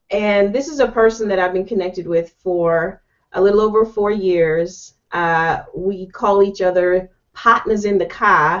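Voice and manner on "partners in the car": poor, bad put-on Boston accent. Introducing a partner of four years: poor Boston accent. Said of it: "That's my poor rendition of a Boston accent".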